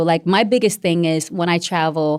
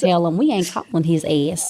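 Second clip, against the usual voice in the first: put-on Southern Georgia accent, woman's voice. Speaker imitating a woman they are discussing, in a southern georgia accent. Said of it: "That's that voice".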